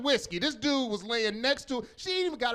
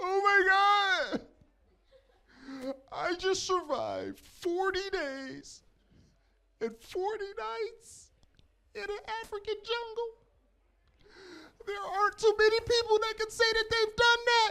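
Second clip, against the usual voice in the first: put-on tearful woman voice. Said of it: "she's, like, crying".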